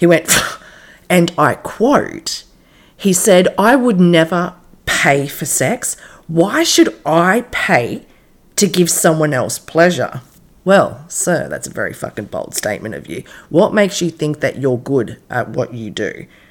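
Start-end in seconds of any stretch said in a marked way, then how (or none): 3.6-10.2 scornful, contemptuous snarl. A sex worker retells a married man's reply to her, in a mock snarl. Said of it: "he snarled".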